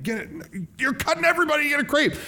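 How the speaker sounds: play-acted yell, very high and shrill. Telling how a man yelled at an old man who cut in line, retelling a yell. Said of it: "he yelled at him like".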